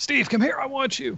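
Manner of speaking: put-on eager voice.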